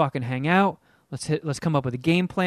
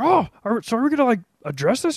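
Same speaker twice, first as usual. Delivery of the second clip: puppet-like put-on voice, higher; 7 semitones higher than usual. Retelling what Jeff said while playing Fortnite: imitating Jeff. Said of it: "not Jeff Clark impersonations".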